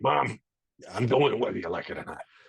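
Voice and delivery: put-on low cigar-chomper voice. Retelling what they told their mom as a kid, imitating a cigar smoker's voice. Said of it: "sounded like this when I was a kid".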